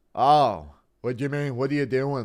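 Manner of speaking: put-on Irish accent, laid on for show. Doing a requested impression of Ben Williams getting curb stomped: deep Irish voice. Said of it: "putting on the deep Irish voice".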